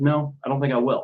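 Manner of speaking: very level, calm, flat, unbothered tone. Retelling a movie scene where the hero refuses a request: calm flat Captain America line. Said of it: "very calmly, very, very flatly just said".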